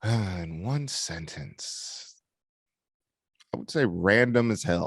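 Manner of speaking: a little hoarse, scratchy, just-woken voice. Just woken up, no green tea yet, summing up a team's season: scratchy just-woke-up voice. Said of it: "My throat's a little uh scratchy".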